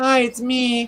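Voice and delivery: very high, pitched-way-up casual voice. Retelling how a caller greeted the host: imitating Arthur's voice. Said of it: "In, in Arthur's voice".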